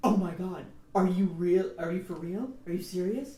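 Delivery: loud, exaggerated, obviously mocking, overacted sarcastic disbelief. Explaining sarcasm that openly makes fun of someone: exaggerated, overacted sarcasm. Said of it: "It's like overacting and underacting. When you're sarcastic, you either go".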